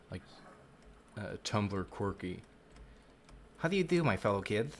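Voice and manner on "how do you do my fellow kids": high, nasal, nerdy voice. Trying out a voice that sounds like a nerd: nasal nerd voice. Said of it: "high-pitched voice, what I need to do is make it nasally so it sounds like a nerd".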